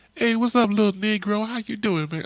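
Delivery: high-pitched, street-style pimp voice. Retelling meeting his uncle's friend, who greets him, imitating Milton's high voice. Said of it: "spoke in a high voice".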